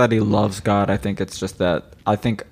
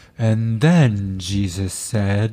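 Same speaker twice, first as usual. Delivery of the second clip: grand, dramatic narrator reading voice. Imitating the man who reads on a bible app, in a dramatic bible reader impression. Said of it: "He does it really dramatic".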